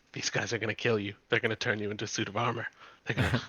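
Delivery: very quiet, half-whispered. Casting a spell, half-whispering threats into a guard's mind: half-whispering into a mind. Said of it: "and start whispering".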